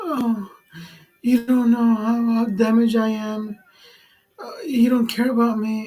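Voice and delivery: phony, high, tearful sobbing voice. Mimicking an ex who fake-cried on a recording, imitating fake crying. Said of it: "She's fake crying".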